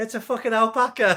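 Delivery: play-acted, shrill, very high yelled line. Retelling an old man's reply in a viral video: imitating a shouted reply. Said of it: "he just shouts back".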